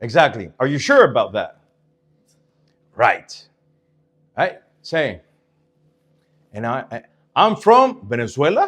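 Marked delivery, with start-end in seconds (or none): 6.9-8.7 slow, unsure, doubtful, second-guessing tone. Told to say it, the speaker states where they are from, sounding doubtful. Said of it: "you sounded like you were doubting yourself".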